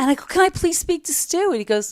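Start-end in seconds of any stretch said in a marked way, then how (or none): 0.2-1.5 put-on very high, tearful, crying voice. Retelling calling about a broken-down car: retelling own past crying.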